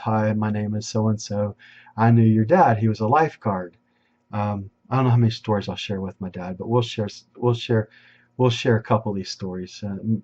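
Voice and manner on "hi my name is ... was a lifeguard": ordinary talk, nothing marked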